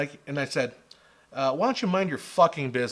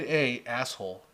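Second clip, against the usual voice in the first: ordinary delivery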